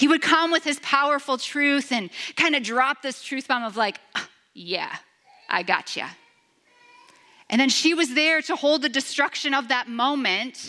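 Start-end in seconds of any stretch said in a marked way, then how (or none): 4.1-6.1 mock knowing, all-knowing edgy voice with attitude. Reading Jesus's line the way it was once read: edgy Jesus voice. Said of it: "read it with an edgy voice".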